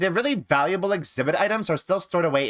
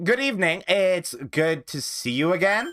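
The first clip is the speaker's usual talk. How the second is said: put-on Valley Girl accent. Getting back into doing voices after a while, the speaker tries a Valley Girl voice. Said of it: "I have to do the Valley Girl voice".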